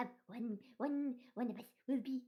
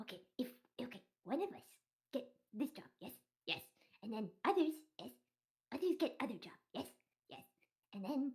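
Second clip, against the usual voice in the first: bird character voice, broken English, quieter; 5 dB quieter than usual. Huddled in a corner with the flock, a bird talks in broken-english bird voice. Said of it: "It is bird solidarity here, / I love question. I ask question. No. They ask question, we answer".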